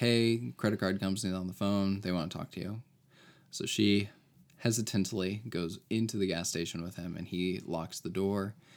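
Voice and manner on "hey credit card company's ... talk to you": ordinary talk, nothing marked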